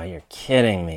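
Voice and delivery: low falling tone on me, disappointed. Reacting to news that the stock market crashed, low falling tone on me. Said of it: "that kind of down tone would indicate disappointment or disgust".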